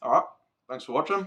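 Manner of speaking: talking with mouth full. Thanking viewers after tasting the smoked trout, talking with a mouthful of food. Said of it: "Sorry, mouthful of food".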